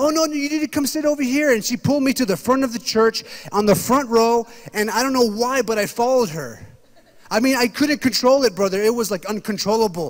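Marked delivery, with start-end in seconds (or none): 0.0-1.5 put-on sweet little old grandma voice, pitched up. Retelling how the church usher greeted him: imitating a sweet old grandma. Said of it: "old sweet little grandmas".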